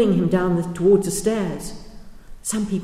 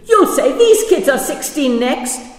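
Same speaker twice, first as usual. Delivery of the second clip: high, loud, shrieking scream; 8 semitones higher, 8 dB louder than usual. Reading a story aloud, a woman in the crowd spots two children and screams. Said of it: "a woman spotted Naledi and Tiro and screamed".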